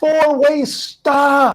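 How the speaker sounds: put-on, shrill, very high yell. Speaker retells yelling at a pickup driver who ran the stop, retelling a yell. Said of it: "I yelled out".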